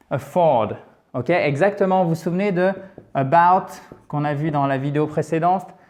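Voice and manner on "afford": afford with stress on the second syllable "ford". Explaining where the stress falls in a word: stress on ford in afford. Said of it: "l'accent tonique se fait sur la deuxième partie".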